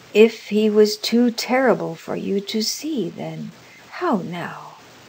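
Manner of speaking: ordinary delivery, nothing marked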